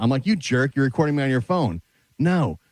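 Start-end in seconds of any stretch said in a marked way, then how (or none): none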